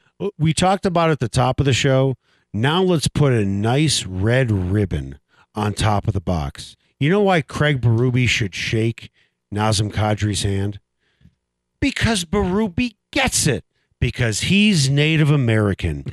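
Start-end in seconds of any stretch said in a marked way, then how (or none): 2.5-16.1 heavy, dripping sarcastic irony with swooping pitch. Talking hockey with a co-host, mock praise with irony dripping from every word. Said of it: "Irony is dripping from your mouth".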